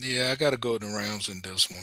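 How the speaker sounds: low, let-down, reluctant, disappointed voice. Picking the Rams though really wanting the Panthers: disappointed. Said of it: "so disappointed when you said that".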